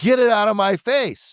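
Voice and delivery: mock screaming, very high-pitched. Retelling a woman yelling at her husband filming her, retelling a scream.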